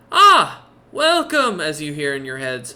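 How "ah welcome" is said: bright, cheery, happy, very high and loud. Voicing a shopkeeper greeting the party on entering: smiling happily. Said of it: "he kinda smiles happily seeing you lot and goes".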